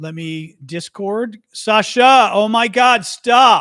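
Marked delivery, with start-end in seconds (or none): 1.5-3.6 booming, very loud, slow, drawn-out raised voice. Signing off a stream, telling the whining dog to stop, raised voice. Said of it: "I'm not supposed to raise the voice".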